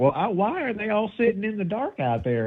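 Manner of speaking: high, squeaky celebrity-style voice.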